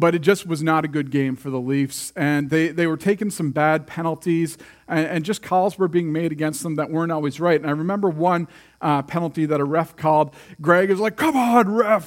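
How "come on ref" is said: play-acted, high-pitched hollering yell. Retelling Greg's reaction to a ref's call in a Leafs game: imitating Greg yelling at TV. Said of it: "he's yelling at the TV".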